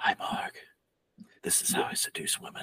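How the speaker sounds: acted breathy, quiet voice. Acting out the whispery scene with Marg: whispery Steven Seagal impression. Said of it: "super whispery scene with Marg".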